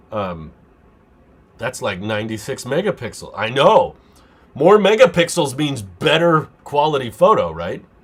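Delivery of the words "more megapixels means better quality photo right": loud, sing-song, mock-serious sarcastic delivery. Reading a viewer comment about megapixels and answering it: sarcastic. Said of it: "There I go again with the sarcasm".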